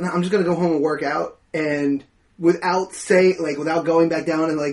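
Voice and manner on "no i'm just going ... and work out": normal talking voice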